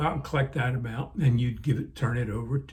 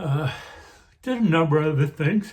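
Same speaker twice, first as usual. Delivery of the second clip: talking through yawns; 4 semitones higher, 4 dB louder than usual. Telling viewers about things he did at work, yawning while talking. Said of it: "I don't know why I'm yawning so much".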